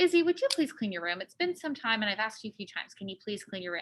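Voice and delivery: contained anger under a soft, patient, reasonable tone. The speaker acts out asking Izzy to clean her room: acting out a reasonable request. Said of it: "my tactic is I'm going to first try to be reasonable".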